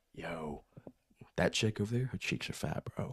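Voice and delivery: very hushed, secretive whisper. Explaining a made-up scenario, acting out whispering to Matt, retelling a whisper. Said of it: "And I go whisper to Matt".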